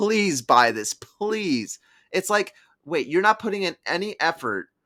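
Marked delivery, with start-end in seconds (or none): 0.0-1.8 play-acted, slow, drawn-out pleading. Mimicking a company representative begging customers to buy a game: imitating someone begging. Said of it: "He was begging, like".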